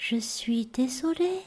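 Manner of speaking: tiny, faint, soft thread of a voice. Retelling what a woman said to her without expression, tiny thread of a voice. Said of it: "un filet de voix".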